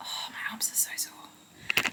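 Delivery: soft, slow, breathless whisper.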